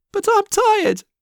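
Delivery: very high, squeaky little squeak. Told by Loga to keep moving, Nana answers him, squeaking. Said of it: "Nana squeaked".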